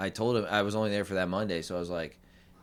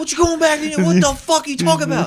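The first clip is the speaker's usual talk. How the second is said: imitated scolding tone, higher and louder; 11 dB louder than usual. Retelling how a friend scolded a change of plans: imitating a friend scolding. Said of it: "and he was like".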